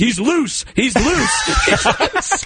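high-pitched, laughing, loud yell.

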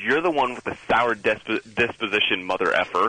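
normal talking voice

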